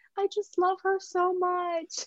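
sobbing, very high, slow and drawn out.

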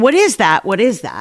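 plain

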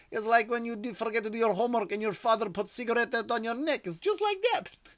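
put-on Russian accent, very high. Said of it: "that accent doesn't create a good".

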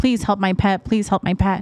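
imitated crying, pleading tearful tone. Retelling how families beg for help at the animal hospital: imitating crying, pleading pet owners. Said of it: "families that are crying and pleading, like".

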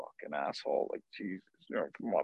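whispered, muttered under the breath. Retelling a reaction to a changed call: retelling own muttered cursing. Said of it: "cursing under my breath".

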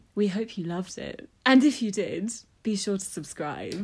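toned-down acted sexy voice. Reading the outro after being told to bring it down: acted sexy, toned down. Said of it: "now bring it down. I want more sexy".

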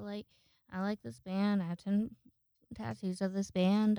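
ordinary delivery

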